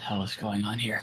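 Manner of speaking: very quiet, low mutter under the breath. Narrating a fight turn, voicing Hank, Hank muttering to himself. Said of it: "kind of mutter to himself, not like loud".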